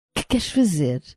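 exclaimed in a bitter tone. Narrator reading a woman who follows him to the cliff edge, bitter exclamation. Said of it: "exclamou ela num tom amargurado".

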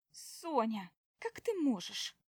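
sudden exclaimed outcry. The narrator's sister reacts to her remarks about the food, crying out. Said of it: "— вскрикивает сестра".

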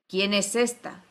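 arrogant, superior tone. A queen, her procession halted, asks about a stranger; haughty voice. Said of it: "con voz altanera".

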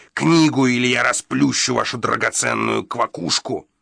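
menacing, rasping hiss through the teeth. Narrating a man threatening the host over a book, as a hissed threat. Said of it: "прошипел Гадсон, показывая в ухмылке пожелтелые зубы".

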